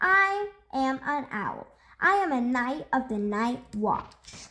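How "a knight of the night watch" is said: ordinary delivery, nothing marked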